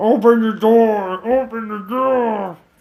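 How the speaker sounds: very slow, drawn-out, zombie-like voice. Describing Walt Junior banging on the car, the speaker acts him out: Walt Junior as a zombie. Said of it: "he turns to like a zombie".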